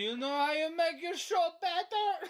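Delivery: put-on Croatian-accented speech. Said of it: "the guy with accent like that".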